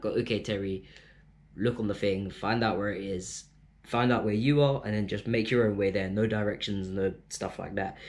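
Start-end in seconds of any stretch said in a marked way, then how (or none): none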